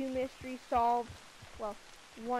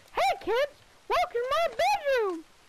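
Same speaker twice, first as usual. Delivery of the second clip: big, bouncy, squeaky high voice; 7 dB louder than usual. The speaker greets the audience as a bit, in Mickey Mouse voice. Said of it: "the Mickey Mouse voice".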